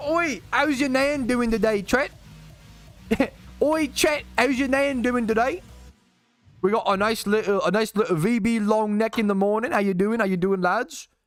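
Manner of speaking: put-on British accent, pitched high. Greeting chat and the lads on stream, in a British accent. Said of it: "It's a perfect British accent, bruv".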